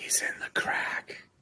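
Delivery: very quiet, faint, breathy, barely voiced whisper. Narrating a tabletop game, the player's shadow comes back to report, whispering. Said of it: "it whispers to you".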